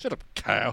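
condescending, dismissive, talking-down tone. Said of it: "easy to say in a condescending tone".

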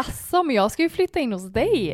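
playful, teasing, half-joking tone. Retelling what a woman said to a man, in a joking tone. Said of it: "Lite skämtsamt så".

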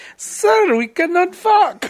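put-on very high, very slow, drawn-out Indian accent. Retelling a phone scammer's replies, imitating an Indian accent. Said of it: "of Indian accents".

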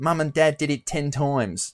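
put-on Aussie, Australian-accented delivery. Imagining a new wife waking her husband on their wedding night, in an Australian accent. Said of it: "Fucking Australian accent".

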